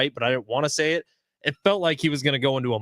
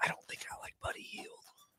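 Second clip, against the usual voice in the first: very quiet whisper under the breath. Host reviewing basketball player picks with a co-host, whispering. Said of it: "Why are you whispering?".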